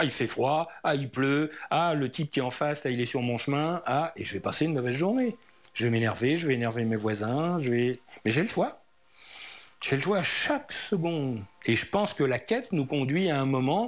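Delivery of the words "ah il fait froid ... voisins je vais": ordinary delivery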